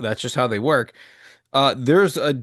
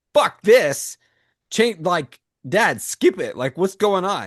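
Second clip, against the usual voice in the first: mock fed-up, irritated kid griping; 4 semitones higher than usual. Retelling how the kids react when they see an ad: imitating angry kids. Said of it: "They get super pissed".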